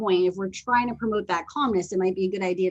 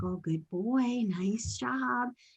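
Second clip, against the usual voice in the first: very slow, calm, gentle, reassuring and encouraging tone; 4 semitones higher, 7 dB quieter than usual. Retelling how they praise the dog lying down: imitating calm encouraging praise. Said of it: "that calm, encouraging praise".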